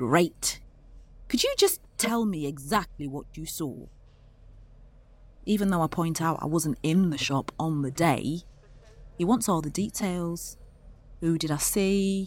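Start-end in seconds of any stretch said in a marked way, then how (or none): 0.0-3.9 upper-class posh, polite tone. Retelling a phone call where a detective asks what the speaker saw, imitating DC Gray's posh voice. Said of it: "his posh voice comes back".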